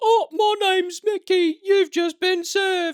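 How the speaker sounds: mocking voice pitched way up high. Disguised as a famous YouTuber at the mall to serve him, in a Mickey Teller voice. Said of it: "disguise yourself as Mickey Teller".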